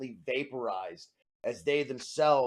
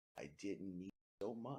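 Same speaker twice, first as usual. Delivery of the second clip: very quiet, soft, hushed half-whisper; 4 semitones lower, 15 dB quieter than usual. Voicing a figure heard only by one player: half-whisper. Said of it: "only you can hear a whisper".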